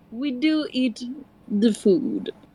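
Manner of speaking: best-effort put-on French accent. Voicing a character's reply to a question yelled down a hall, french accent. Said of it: "let me do my best French accent".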